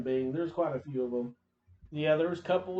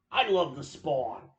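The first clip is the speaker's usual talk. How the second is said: slow, deliberate, drawn-out delivery. Imitating the creator of Spawn: Todd McFarlane impression. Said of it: "And he talks like this".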